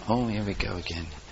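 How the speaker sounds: very soft, low muttered aside.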